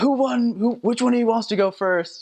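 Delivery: put-on very high, taunting drunken holler. Retelling a drunk man threatening missionaries: imitating a drunk man yelling. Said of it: "he was yelling at us and screaming at us".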